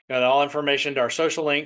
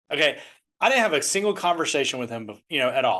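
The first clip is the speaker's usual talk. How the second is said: ordinary talk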